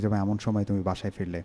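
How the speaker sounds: plain reading voice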